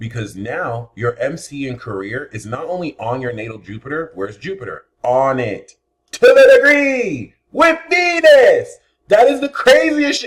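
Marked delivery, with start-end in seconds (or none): 6.1-10.3 shrill, very high, loud, ecstatic excited screaming. Reading someone's birth chart and spotting Jupiter on their MC, screaming excitedly. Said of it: "Sorry for screaming".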